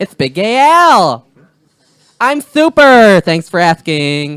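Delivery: very loud, high, swooping, belted sing-song voice. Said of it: "That's actually pretty decent".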